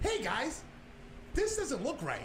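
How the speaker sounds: very high, slightly lifted voice. Describing how people react when he speaks up, the speaker uses a slightly raised voice. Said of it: "if I raise my voice and I say".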